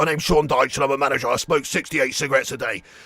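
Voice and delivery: very deep, soft, murmured, subdued voice. Getting into Sean Dyche mode for a bit, doing a Sean Dyche impression. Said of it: "let me just get in the Sean Dyche mode".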